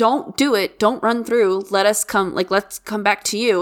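normal talking voice

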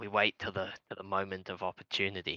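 hushed whisper. A player in a tabletop game gives another character's reply: whispering back. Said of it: "Harry whispers back".

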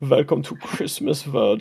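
exaggerated, played-up fake German accent. Role-play scene about christmas world, in a put-on german accent. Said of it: "I'm going to talk in the German accent".

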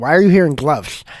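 rude, dismissive, mocking comic voice. Retelling what a former comic asked at an open mic: imitating a rude comic's voice. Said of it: "I did his voice like that".

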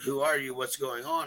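plain

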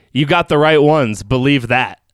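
normal talking voice

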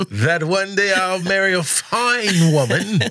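high preaching oration, fine stretched long. Joking about a recurring dream, the speaker does a Martin Luther King impression.

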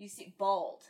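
bald stressed and punched out loud. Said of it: "Emphasis on bald".

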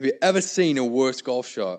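put-on British accent. Retelling a golfer asking his caddy about a shot, in a put-on british accent. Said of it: "in his British voice".

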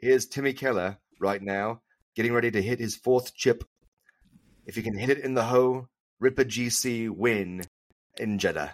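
fake British commentator accent. Acting out a backyard chip for the win: put-on British voice. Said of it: "You gotta do a British voice".

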